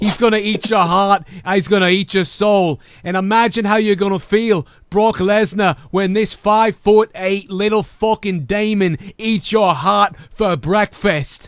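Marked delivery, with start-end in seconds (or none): 0.0-2.8 put-on menacing wrestler promo voice, higher. Imagining a wrestler cutting a scary promo: imitating Finn Balor's demon promo. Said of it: "if he talked like that".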